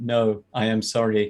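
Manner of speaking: robotic text-to-speech voice. Voicing a failed servant apologizing to his master: Microsoft Sam voice. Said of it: "Like Microsoft Sam voice".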